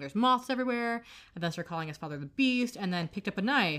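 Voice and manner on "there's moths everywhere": mock sudden, high yelling outburst. Retelling a son's outburst at a celebration dinner, imitating his yelling. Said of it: "suddenly he starts yelling".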